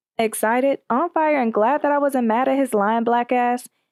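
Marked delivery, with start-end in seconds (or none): none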